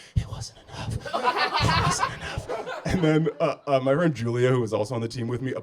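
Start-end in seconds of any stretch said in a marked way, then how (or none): 0.2-2.8 put-on breathless gasping, quiet and slow. Retelling the end of a race, imitating gasping quietly. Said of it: "I remember gasping and, and quietly being like".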